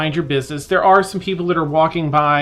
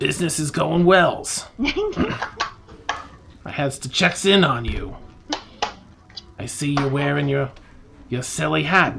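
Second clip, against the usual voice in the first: coarse, rough, gruff character voice; 3 dB quieter than usual. Imitating a refined noble who talks in a gruff voice. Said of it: "you hear the same sort of gruff voice".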